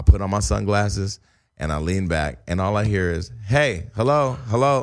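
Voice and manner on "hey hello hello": put-on yelling, calling out. Retelling being woken on a plane: imitating someone yelling. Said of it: "Who the fuck is yelling?".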